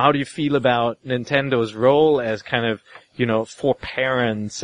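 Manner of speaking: ordinary talk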